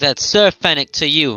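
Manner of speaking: severe, very stern, no-nonsense insistence. Playing a knight correcting a guard about his title: very stern. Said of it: "say it very stern".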